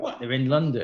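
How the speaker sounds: plain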